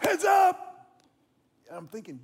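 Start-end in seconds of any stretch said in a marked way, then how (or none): 0.0-0.9 very loud, very high yelling. Retelling coaching first base and yelling to a distracted player, retelling a loud coach's yell. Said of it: "I was encouraging him very loudly as a coach".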